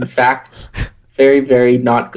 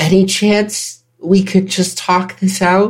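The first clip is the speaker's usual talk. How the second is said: high, loud yelling called out; 7 semitones higher than usual. A character on a ledge facing a dragon yells to it. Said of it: "yells to the I... dragon".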